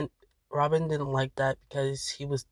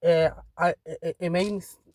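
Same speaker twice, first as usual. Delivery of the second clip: stammering, stuttering, slower pace; 3 semitones higher than usual. Telling viewers a story and tripping over the words, stuttering. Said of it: "No, I'm stuttering".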